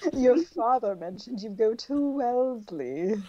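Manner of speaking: creepy, unsettling voice, every word creepy. Reading a story aloud, the narrator voices Gideon George speaking to Cordelia, creepy Gideon George voice. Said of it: "I don't know how to make this guy's voice. He's a creeper".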